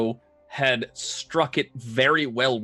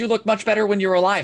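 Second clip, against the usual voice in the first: put-on high-pitched, cute, adorable little-girl voice; 8 semitones higher, 3 dB louder than usual. Game narrator voicing a character translating another's words; adorable little girl's voice. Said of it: "translates in an adorable little girl's voice".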